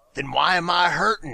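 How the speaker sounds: put-on little snarl. Retelling what a woman said back to him, with a little snarl. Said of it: "looks at me with a little snarl and goes".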